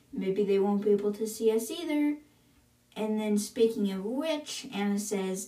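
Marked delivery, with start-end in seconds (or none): none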